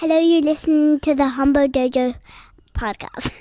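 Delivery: tiny high voice. A young guest repeats the podcast intro after the host: teeny tiny little voice. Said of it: "that teeny tiny little voice there was little Eve".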